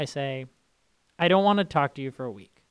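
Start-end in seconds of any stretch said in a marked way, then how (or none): none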